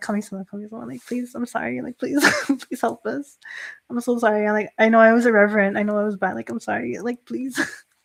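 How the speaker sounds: acted-out, mock-pleading tone sounding guilty. Speaker recounts praying to Kami-sama in a panic, retelling guilty pleading. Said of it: "I felt so guilty".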